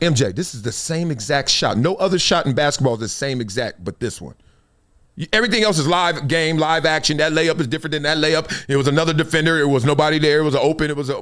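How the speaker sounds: plain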